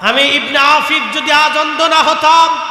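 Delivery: shouted, stern, scolding tone.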